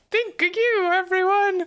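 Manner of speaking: mock cartoonish Italian accent. Wanting to learn a better accent, the speaker recalls the old one: stupid Italian Mickey Mouse accent. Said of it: "the stupid Italian Mickey Mouse accent".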